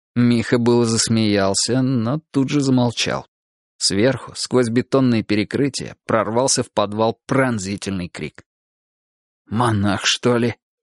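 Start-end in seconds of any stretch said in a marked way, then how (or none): 9.4-10.5 frightened, fearful whisper, lower, slower. In a basement, Mikha hears a piercing scream from above; frightened whisper. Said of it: "испуганно прошептал он".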